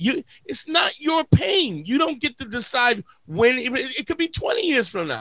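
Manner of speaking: heated angry rant. Retelling what was said to a guy who dismissed old pain: retelling his own heated words. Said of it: "I'm getting heated".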